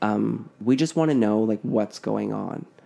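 ordinary delivery

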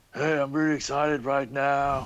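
every word over-pronounced, serious and earnest actor voice. Describing how the actor's accent changes: Keanu Reeves impression. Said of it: "Good Keanu Reeves impression".

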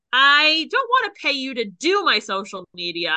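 ordinary talk, nothing marked

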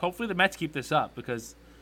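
ordinary talk

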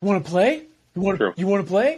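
playful, high-pitched, excited cooing voice. Showing how people talk to a dog: imitating excited dog-talk inflection. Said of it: "it's in the inflection in your voice".

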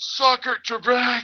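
mock very high, full-lunged holler. Telling how you yelled at guys back on the trail, retelling a scream at the top of your lungs. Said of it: "I screamed at the top of my lungs".

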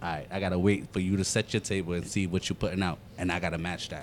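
ordinary delivery

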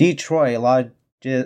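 slow, careful reading at half normal pace. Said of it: "Let me say it slow".

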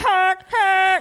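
high-pitched honk like a train.

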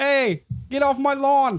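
put-on New York accent.

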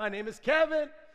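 loud, high-pitched shouting.

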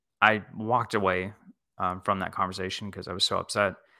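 usual speaking voice

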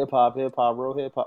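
ordinary talk

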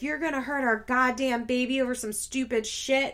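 mock-furious, livid angry tone. Recounting a fight, voicing a man's reply to a friend, retelling a livid outburst.

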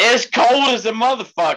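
shrill, very high-pitched yell. Answering another speaker's question about the weather, yelling. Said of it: "Why are you yelling".

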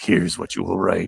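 low, rough, growling demon voice. Describing the narrative heard in their head at night, demon voice. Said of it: "It was like a demon's voice".

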